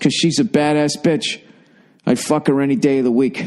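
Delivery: ordinary delivery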